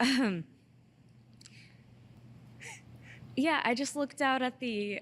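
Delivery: tearful voice, talking while crying. Recalling a show, the speaker unexpectedly tears up: crying. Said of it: "I don't even know why I'm crying right now".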